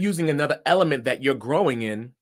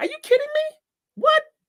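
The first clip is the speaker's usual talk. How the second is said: very high-pitched, disbelieving surprised outburst; 4 dB louder than usual. Teaching how pitch adds color, the speaker demonstrates: surprised voice. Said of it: "being surprised in my voice".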